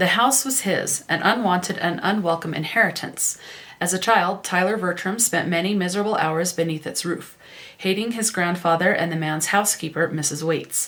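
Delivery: ordinary talk, nothing marked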